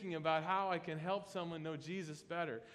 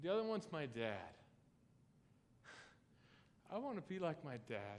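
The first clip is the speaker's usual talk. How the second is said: soft, choked-up voice breaking into tears; 3 semitones lower, 6 dB quieter than usual. A speaker talks about a person he admires, choking up and crying. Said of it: "I'm sorry, I didn't mean to cry there".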